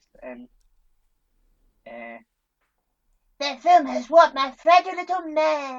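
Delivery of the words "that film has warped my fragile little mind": shrill, very high and loud cartoon character voice. Doing impressions when asked for another go: Eric Cartman voice. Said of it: "what's the line that Eric Cartman says?".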